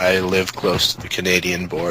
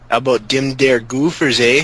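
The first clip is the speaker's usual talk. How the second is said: heavy Minnesota accent, higher pitch; 6 semitones higher, 3 dB louder than usual. Friends teasing each other about accents: minnesota accent. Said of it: "It's a Minnesota accent".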